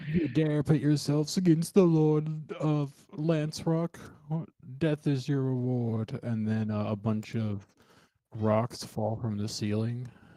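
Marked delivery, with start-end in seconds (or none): 0.1-6.2 high-pitched, threatening, villain-like yell. Voicing a guy yelling at the players, yelling as the Lord of Lance Rock. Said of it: "There was a guy yelling at you guys".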